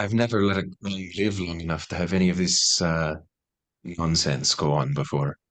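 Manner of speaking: secretive, hushed half-whisper. Voicing a character speaking quietly to another character: half-whispering. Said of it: "whispers to Nethys".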